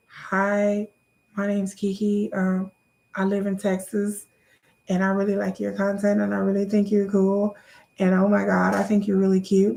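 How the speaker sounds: put-on awkward nervous voice. Acting out own DM to a celebrity: imitating own nervous lame message. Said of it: "do you know how lame that fucking sounds".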